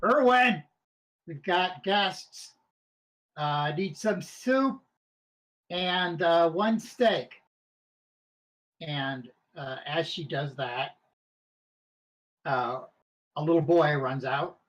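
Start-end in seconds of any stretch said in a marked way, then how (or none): 0.0-7.3 loud shouting. Voicing a character placing orders with Irwin in the back: yelling into the back room. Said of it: "and yells into the back".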